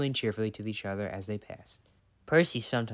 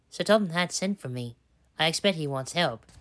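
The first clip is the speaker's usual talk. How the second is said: pompous, self-important, important-sounding, high-pitched delivery; 7 semitones higher, 4 dB louder than usual. A narrator reading a train story voices an engine speaking to another engine, importantly. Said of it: "he said importantly to Edward".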